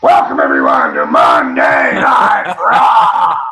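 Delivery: yelled out, very low, swinging and swooping. Retelling being asked to do a Vince McMahon impression: yelled Vince McMahon impression. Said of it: "Do Vince McMahon for him... I yelled out".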